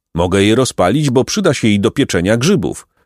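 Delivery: plain reading voice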